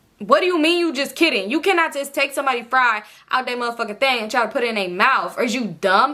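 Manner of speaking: heated, acted-out angry rant, letting rip. Retelling going off on a man who joked with a fry, retelling an angry rant. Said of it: "I'm like kind of going off on him".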